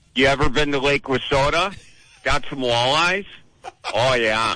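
high-pitched Wisconsin dialect. Asked by the host for a line from Titanic, delivering it in a Wisconsin accent. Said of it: "in that wonderful Wisconsin accent".

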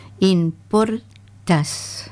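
app name said slowly, clearly, drawn out.

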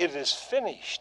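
ordinary delivery, nothing marked

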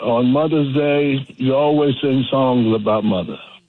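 normal talking voice

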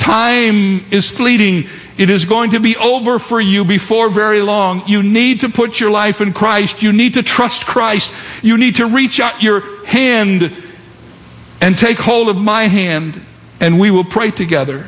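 high-pitched, urgent, pleading voice. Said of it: "And the vicar said to him".

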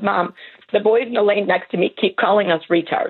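normal talking voice

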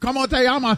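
Spanish spoken with Japanese Osaka-style accent. Joking around in Spanish, speaking Spanish with a Japanese accent. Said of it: "Why do you say it like you're from Osaka?".

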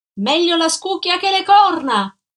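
loud, high shout. Narrator reads a woman shouting down from a railing, shouted. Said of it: "Gridò lei".

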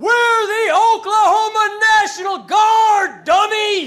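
booming soldier's bellow, loud and pitched very high. Speaker recalls a staff sergeant standing up at the back, retelling his bellow. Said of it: "stands up at the back of the room and just bellows".

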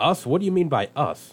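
baffled, confused voice. Reading a story aloud, a father answers a boy's question, puzzled. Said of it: "Billy's father was puzzled and said".

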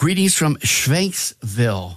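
questionable put-on German accent. Reading out a viewer's greeting: attempted German accent. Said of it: "that accent".

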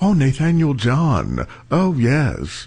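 slow, drawn-out British accent. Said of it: "if you say it with a British accent".

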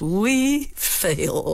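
contemptuous. Showing how a dominating partner might deliver the words, contemptuous. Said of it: "a contemptuous".

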